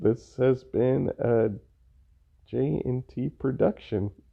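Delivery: slow, drowsy, low-energy sleepy delivery. Closing out a podcast episode, a co-host signs off sounding like falling asleep. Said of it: "Why do you sound like you're falling asleep?".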